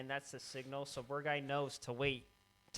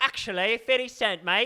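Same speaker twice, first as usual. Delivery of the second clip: very loud, high-pitched put-on voice, belted; 8 semitones higher, 14 dB louder than usual. Repeating a correction after being told of sounding like Harry Potter: Harry Potter voice. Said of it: "You just turned into Harry Potter".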